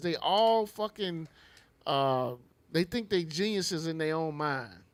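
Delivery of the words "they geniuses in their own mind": ordinary talk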